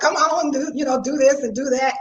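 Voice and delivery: ordinary talk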